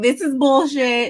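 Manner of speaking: mock female Baltimore accent. Retell the one time Kay did say something, imitating Kay's Baltimore accent. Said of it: "her Baltimore accent".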